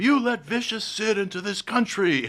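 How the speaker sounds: very high, shrill, accusing scream. Retelling how people screamed at a man who showed up late; imitating screaming. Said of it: "they started screaming at him".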